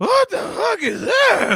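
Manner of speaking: very high, slow, weird cartoon voice. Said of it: "have the weirdest voice ever".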